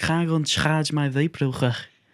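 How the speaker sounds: put-on Scouse accent. Quoting a film character's line in his Scouse accent: imitating a Scouse character Milton Keynes. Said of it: "He's a Scouse man called Milton Keynes".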